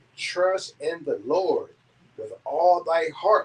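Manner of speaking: slow, deliberate reading.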